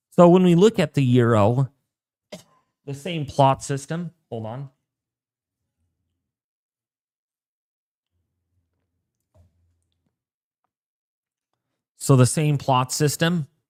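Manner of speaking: talking slowly, unhurried. Tired forecaster walking through a forecast model; talking slowly. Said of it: "I'm talking slow tonight".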